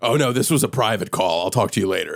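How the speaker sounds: furious, fuming, angry tone. Retelling a caller's reply on a show: imitating a furious tone. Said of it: "in a furious tone is like".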